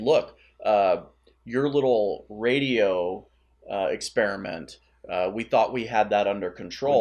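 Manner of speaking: ordinary talk, nothing marked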